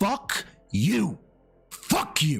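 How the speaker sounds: heated, furious, pissed-off cursing. Ranting at someone with over two hundred thousand subscribers, speak pissed off. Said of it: "I am fucking pissed off".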